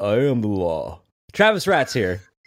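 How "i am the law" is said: very slow, with every word dragged out. Answering a podcast welcome with one line: Stallone voice. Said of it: "You went Stallone".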